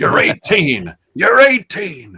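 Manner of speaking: put-on very high, very loud, booming, swooping old man voice. Retelling a comedian's joke, impression of a sixty-year-old guy. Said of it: "Here's my impression of a sixty-year-old guy".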